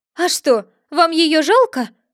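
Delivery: frightened, fearful tone. Narrator reads the rabbit asking Alice a question, frightened. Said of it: "спросил кролик испуганно".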